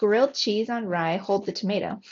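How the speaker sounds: plain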